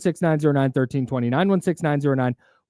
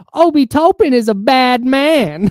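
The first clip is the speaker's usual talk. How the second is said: very high, slow, drawn-out, raised voice; 10 semitones higher, 8 dB louder than usual. Retelling a call-in show caller, imitating his really high-pitched voice. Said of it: "I'm going to try my best to mimic the voice".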